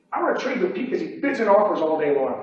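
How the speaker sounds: usual speaking voice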